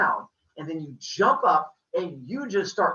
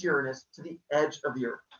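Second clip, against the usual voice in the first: ordinary talk, nothing marked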